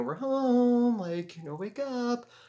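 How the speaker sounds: creepy, very high-pitched creature voice.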